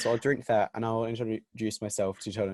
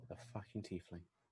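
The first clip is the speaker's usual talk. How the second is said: muttered under breath, much quieter; 2 semitones lower, 19 dB quieter than usual. A tabletop player says an aside under their breath. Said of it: "I will just say under my breath".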